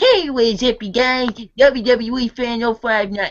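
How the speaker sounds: put-on high, squeaky, eager little-kid voice. Imitating how a channel started in two thousand six would sound: squeaky little kid voice. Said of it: "squeaker-voiced little kid".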